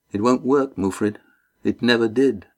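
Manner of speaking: ordinary delivery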